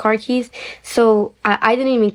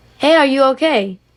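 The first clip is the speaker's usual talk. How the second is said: mock, mild, light called-out yell; 4 semitones higher than usual. Retelling a bystander calling out during an escape: imitating someone yelling. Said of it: "yell out".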